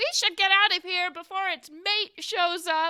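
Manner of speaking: very high-pitched, loud shrill voice. Game master voicing an unseen figure as a dog bounds toward the players, shrill voice. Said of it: "You also hear a shrill voice".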